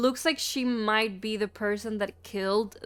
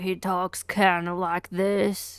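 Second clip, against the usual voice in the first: talking like a cowboy; 3 semitones lower than usual. Describing a cafeteria guy who sounds like a cowboy, doing a Titus cowboy impression. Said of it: "the guy that sounds like a cowboy".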